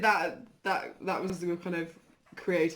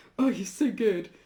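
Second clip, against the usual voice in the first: put-on irritated, envious, grudging, annoyed tone; 4 semitones higher, 4 dB louder than usual. Imitating how the other speaker praises their art: imitating an annoyed tone.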